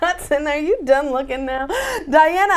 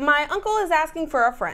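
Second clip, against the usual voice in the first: usual speaking voice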